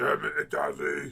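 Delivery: put-on deep, creaky girl's voice. Telling a story about a girl with a very deep voice, the speaker does an impression of a deep-voiced girl. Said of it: "I'm really bang on impression of her".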